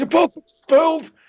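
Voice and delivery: put-on cranky school principal voice. Comparing how a politician sounds to a cartoon principal: Bernie Sanders impression. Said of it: "what Bernie sounds like sometimes".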